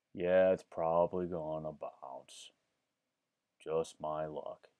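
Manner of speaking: deep cartoon donkey voice. Reacting to a chat message: Eeyore voice. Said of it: "That actually kind of sounds like Eeyore".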